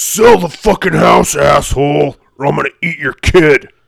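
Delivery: loud, menacing, monstrous demon voice. Asked for your best demon voice, deliver the line in a demon voice. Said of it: "give me your best demon voice".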